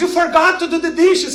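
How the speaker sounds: high, loud mock screaming.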